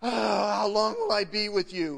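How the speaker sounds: audible sigh. Speaker retells Jesus's words from the Gospels, acting out Jesus sighing. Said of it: "Jesus would sigh".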